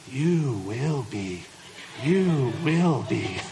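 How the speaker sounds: low, slow, drawn-out wise-creature voice. Speaker plays the mentor answering a single man's pleas: Yoda impersonation. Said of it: "That was a really good Yoda impersonation right there".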